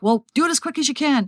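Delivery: high, frantic, panicked, freaked-out voice. Retelling what frantic callers say when told they must wait, imitating a panicked caller. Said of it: "They're like freaking out".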